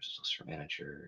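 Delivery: soft whispered mutter, murmured to self.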